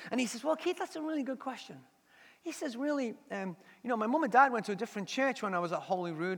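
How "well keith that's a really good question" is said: very posh put-on accent, soft and quick. Retelling a man's answer to the speaker's question, quote him in a very posh accent. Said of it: "he's a really nice accent, but very posh".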